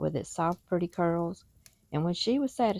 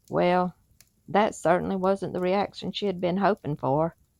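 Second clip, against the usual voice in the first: ordinary delivery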